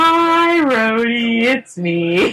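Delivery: put-on sheepish, mortified embarrassment, high, very slow, drawn out. Retelling a funny movie scene where he calls rhodey: mock super embarrassed voice. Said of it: "in that super embarrassed voice".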